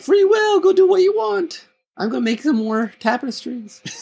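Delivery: very high, airy, breezy voice. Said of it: "but he's very, like".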